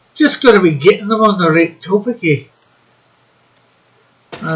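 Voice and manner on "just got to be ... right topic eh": Scottish accent, words rattled off fast. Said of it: "that's more a Scotch, a Scotchman's accent than an Irishman's".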